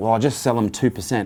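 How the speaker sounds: ordinary talk, nothing marked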